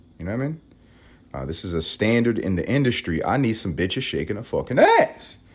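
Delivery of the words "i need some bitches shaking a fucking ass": worked-up, animated, rising rant on the edge. Speaking while the women in his life are sleeping, getting loud. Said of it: "Let me not start getting loud".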